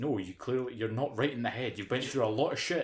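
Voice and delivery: ordinary talk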